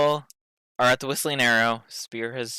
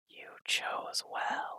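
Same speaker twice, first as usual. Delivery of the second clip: barely audible, breathy whisper. Narrating to a player as a voice speaks to them, whisper. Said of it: "you hear a voice whisper to you".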